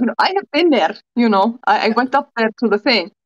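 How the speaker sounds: put-on words in an Icelandic accent. Retelling what a guy said to them: imitating an Icelandic accent. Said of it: "he says it with an Icelandic accent".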